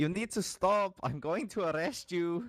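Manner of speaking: high-pitched shout. A player's character chases a fleeing goblin, shouting at it. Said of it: "trying to shout and be like".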